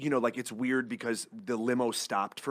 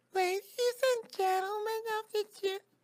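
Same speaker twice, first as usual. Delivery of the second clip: put-on tiny, very high-pitched baby voice. Asked for a sample of the baby lawyer character addressing a jury: baby voice. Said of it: "a baby lawyer who's an actual little baby".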